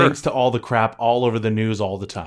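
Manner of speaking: ordinary talk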